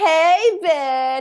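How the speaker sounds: put-on Valley Girl accent. Imitating how women in Orlando greet people: imitating a Valley Girl accent. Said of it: "Valley Girl type accent?".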